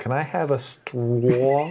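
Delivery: put-on Long Island accent. Do the line of a friend who loves impressions, in a terrible Long Island accent. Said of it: "impressions of the terrible Long Island accent".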